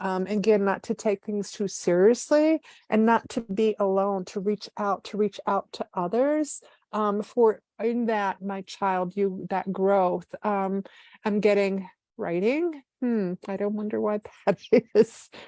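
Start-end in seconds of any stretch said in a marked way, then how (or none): 13.0-15.3 giggling through the words. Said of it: "I'm laughing 'cause I'm giggling".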